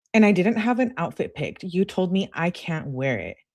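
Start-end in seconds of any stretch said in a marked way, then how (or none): none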